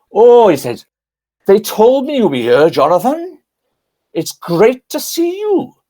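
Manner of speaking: put-on sing-song Welsh accent. Retell a church secretary greeting you when you meet, in Trevor Bray's Welsh accent. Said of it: "he said in his Welsh accent, which I can do".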